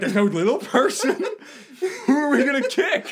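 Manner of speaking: very high, disappointed tone. Imitating a friend let down by the party plans: imitating Sash sounding disappointed. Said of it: "you're gonna be disappointed with anything I do".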